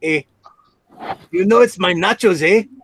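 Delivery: put-on Mexican accent with a Canadian "eh". Speaker answering a viewer comment, imitating Rick's Mexican accent. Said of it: "he does that Mexican accent, and at the end he always goes".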